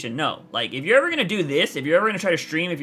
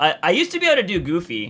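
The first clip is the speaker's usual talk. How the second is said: usual speaking voice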